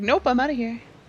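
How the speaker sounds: put-on cat voice. Retelling how the cat pulled away: voicing the cat. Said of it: "he's like".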